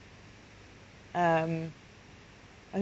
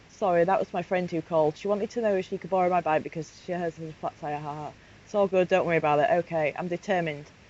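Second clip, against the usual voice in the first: ordinary talk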